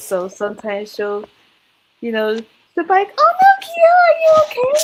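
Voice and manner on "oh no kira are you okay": put-on very high, loud, shrieking anime-girl cry. Describing a show's main character and how she talks, high-pitched Toru voice. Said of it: "she does talk in a high pitched voice".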